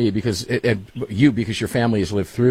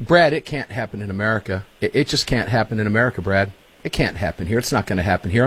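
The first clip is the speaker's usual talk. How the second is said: ordinary talk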